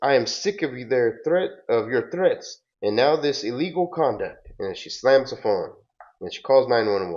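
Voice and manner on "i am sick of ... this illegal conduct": mild, restrained, reined-in shout. Retelling a phone call, the speaker quotes the woman: retelling a yell. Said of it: "she yells and says".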